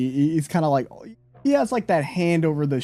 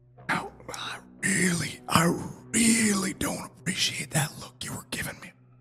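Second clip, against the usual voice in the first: soft, breathy whisper, up close; 6 semitones higher, 6 dB quieter than usual. Retelling a scene where a kneeling man whispers to a woman, whispering. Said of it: "he whispers her".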